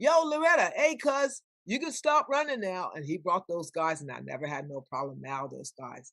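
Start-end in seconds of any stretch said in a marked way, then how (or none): 0.0-2.9 yelling, calling out. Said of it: "he yelled at me".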